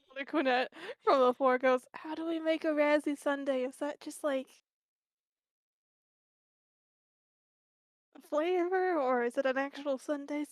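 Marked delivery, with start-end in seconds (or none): 2.0-10.5 soft, hushed half-whisper. A character on the floor half-whispers a question up toward another character, half-whispering. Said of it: "they're whispering this up towards CC".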